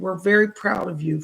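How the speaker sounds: normal talking voice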